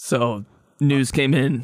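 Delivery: dreamy, floaty voice.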